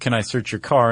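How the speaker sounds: menacing, intimidating, threatening tone. Imitating a cop asking to search a car: imitating an intimidating cop voice. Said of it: "in the most intimidating voice possible".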